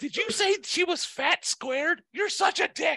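very high, slow, squeaky mocking voice.

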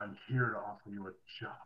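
very quiet, low, hushed, raspy rasping whisper. Voicing a figure offering the players a job, in a hushed, raspy whisper. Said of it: "a very hushed and very kind of whispered voice".

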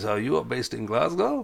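exact imitation of a German man's voice. Retelling a German phone interview, imitating the interviewer's voice. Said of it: "That was an exact copy of his voice".

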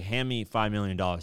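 usual speaking voice

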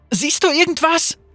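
shouted call, pitched very high. Sarah calls to Lux while panicked shoppers are moved away, shouting. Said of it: "schrie Sarah zu Lux".

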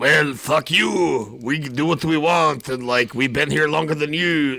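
decent put-on French accent. Acting out a fur-trade dispute with the British, in a put-on French accent. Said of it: "Your French accent was good".

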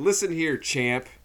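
nasal deadpan put-on voice. Quoting a line from a scene: nasally David Lynch voice. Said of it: "his nasally voice".

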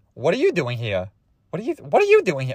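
attempted cartoon duck voice with swooping pitch. Retelling a story, doing Donald Duck's line to his date, Donald Duck voice. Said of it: "I'm trying to do the voice".

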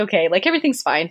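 ordinary talk, nothing marked

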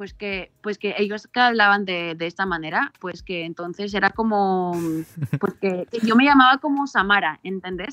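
Spanish accent from Barcelona. Answering a request to show the accent she picked up in Barcelona: Barcelona Spanish accent. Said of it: "Can, can you do it?".

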